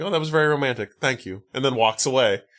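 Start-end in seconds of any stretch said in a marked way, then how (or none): 0.0-1.4 chilly, unmoved, cold and dismissive delivery. Retelling how a woman answers a declaration of love: imitating a cold reply. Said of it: "she just kind of very coldly is like".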